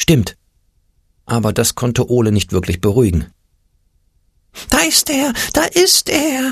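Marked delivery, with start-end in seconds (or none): 4.7-6.5 screeching alarm-like shriek, very high, very slow. As the rival team runs onto the field, a character cries out, shrieking. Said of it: "kreischte der Angstpeter".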